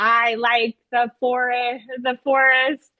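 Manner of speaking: usual speaking voice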